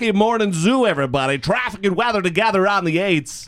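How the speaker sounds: cheesy radio DJ voice. Saying their sick voice sounds like a DJ, the speaker does an extra cheesy DJ voice. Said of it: "my voice is extra cheesy DJ right now".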